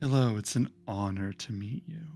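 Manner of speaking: distant, maybe sarcastic. Game master voicing a character greeting a player's character, distant, maybe sarcastic. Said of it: "sarcastic or just distant in the way she speaks".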